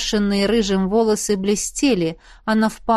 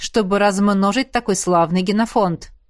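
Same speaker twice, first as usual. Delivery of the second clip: ordinary delivery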